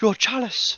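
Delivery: very high, quiet muttering under the breath. Praying in character to Cadbro before taking the chalice: muttering a prayer under breath. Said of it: "mutter a prayer under my breath".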